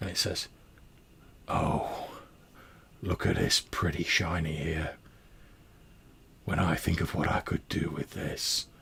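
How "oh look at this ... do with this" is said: slow, slightly echoing, very gruff voice. Recounting a scene where a voice speaks over kitchen knives: slightly echoey gruff voice. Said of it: "a slightly echoey, like a very sort of gruff voice".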